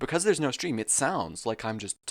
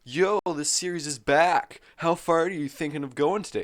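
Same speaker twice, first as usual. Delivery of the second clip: casual, pitched-up, loud chatty voice; 6 semitones higher, 6 dB louder than usual. Reading a viewer's chat message aloud: imitating Invalid Mace. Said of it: "so I had to im-, im-, do an impression".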